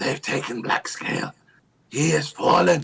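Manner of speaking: urgent, high, rasping, sibilant hissed whisper. Narrator voicing dragon folk speaking Draconic to the players, sibilant hissing dragon speech. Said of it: "you hear in the sibilant hissing language".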